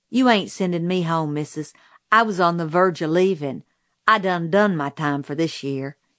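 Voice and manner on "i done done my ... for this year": plain reading voice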